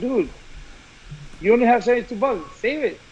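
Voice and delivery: plain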